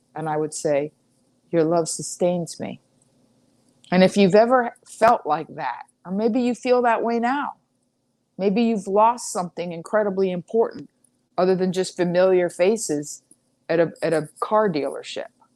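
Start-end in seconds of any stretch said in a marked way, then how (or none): 1.6-2.9 put-on low-energy, lifeless mumble. Retelling replies to a friend's phone calls during heartbreak: imitating a low-energy mumble. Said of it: "I would mumble with no energy".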